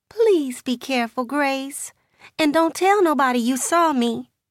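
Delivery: high, quavering, trembling voice. Narrator reads a woman's plea to the narrator, in a trembling voice. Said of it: "her voice trembling like a rabbit what's been boxed".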